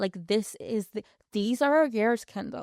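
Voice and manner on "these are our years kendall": terrible, fake, put-on American accent. Speaker tries out a line about their twenties: bad american accent. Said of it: "That was the worst American accent I think I've ever done".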